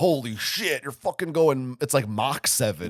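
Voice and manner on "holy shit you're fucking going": big, salesy, hyped-up marketing delivery. Retelling how marketing described the mode: imitating a marketing pitch. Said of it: "in marketing, it sounds like this".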